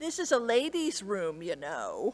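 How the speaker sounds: put-on, really snarky, catty, sing-song put-down. Retelling what a teen girl in the ladies room said, mock-snarky tone. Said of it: "in a really snarky tone".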